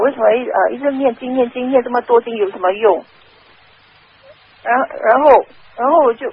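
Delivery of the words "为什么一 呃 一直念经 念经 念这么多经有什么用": ordinary delivery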